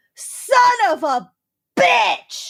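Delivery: put-on very high angry yell, drawn out, stressing "bitch". Retelling a stranger dropping cans in the parking lot: imitating a loud angry yell, stress on BITCH. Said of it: "So loud and such an emphasis on bitch".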